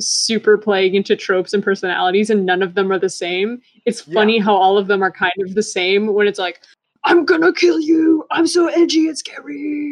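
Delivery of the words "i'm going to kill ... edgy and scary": play-acted angry, edgy villain voice, high, drawn-out. Mocking a show's villains, the speaker acts one out: mock-angry edgy villain. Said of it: "they're all like angry and edgy".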